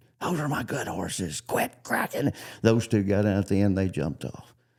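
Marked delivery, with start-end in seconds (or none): 0.2-2.3 high, swooping, hollering scream. Retelling how Kent reacted to the whip cracking: imitating Kent screaming. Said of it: "He's just a screaming".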